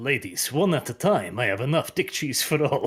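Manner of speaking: put-on Russian accent, silky, smooth and charming. Describing an imagined scene with a bottle on a stool, in a Chad Russian voice. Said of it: "Chad Russian voice coming out like".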